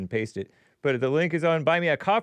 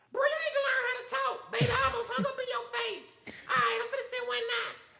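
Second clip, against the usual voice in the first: man's fake woman's voice, much higher, quieter; 7 dB quieter than usual. On a call about sending paramedics, a man faking a woman's voice. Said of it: "a male purported pretending to be a woman".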